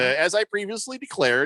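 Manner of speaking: ordinary delivery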